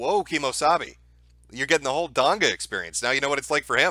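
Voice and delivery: ordinary talk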